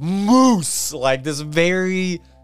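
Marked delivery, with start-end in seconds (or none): 0.0-0.9 moose said the Italian way, pitched high. Retelling how a movie character says one word: Sean's Italian-sounding moose. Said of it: "this very, like, Italian moose".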